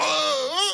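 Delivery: shouting, pitched high.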